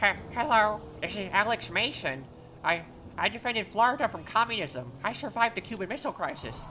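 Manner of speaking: put-on old man voice. Asked to do the old man voice: put-on old man voice. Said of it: "That's like kind of my old old man voice".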